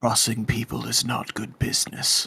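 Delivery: whispered, close and threatening. Whispering in character into the ear of a man run through with a sword: whispering in his ear. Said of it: "I lean in and I whisper in his ear".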